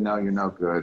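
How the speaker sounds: usual speaking voice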